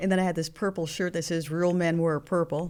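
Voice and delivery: plain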